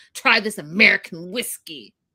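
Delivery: imitated aggressive voice. Retelling someone pushing whiskey in another's face: imitating Brandon's aggressive tone. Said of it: "all aggressive".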